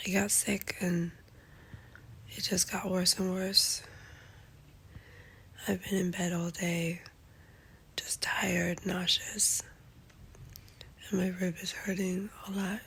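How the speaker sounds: nearly voiceless, lost voice. Giving a quick update on being sick and in bed: lost voice. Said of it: "I completely lost my voice, as you can hear".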